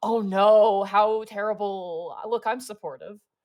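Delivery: put-on king voice with mocking laugh. Voicing the Forest King laughing at a fallen companion: Forest King laughing mockingly. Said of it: "he's laughing at one moment".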